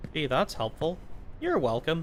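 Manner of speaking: dry, mocking, sarcastic and ironic tone. Talking to themselves, the speaker answers their own unhelpful remark: sarcastic. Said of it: "That was sarcasm".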